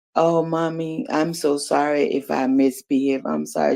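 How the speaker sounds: weepy, tearful, soft crying. A mother retells her child on the boat back, imitating Faye crying. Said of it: "and Faye was just crying".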